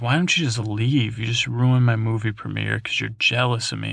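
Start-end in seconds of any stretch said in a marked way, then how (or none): none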